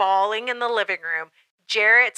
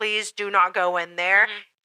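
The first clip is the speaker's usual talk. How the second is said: mock tearful, crying pleading tone; 2 semitones lower than usual. Retelling begging a partner at the doorknob: retelling own tearful begging. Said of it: "I was begging him, crying, begging".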